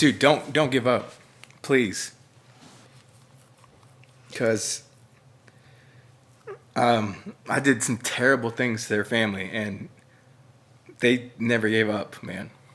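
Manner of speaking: voice catching, choked-up, close to tears. Asked what to say to a person in their life, about to cry. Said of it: "I'm gonna cry".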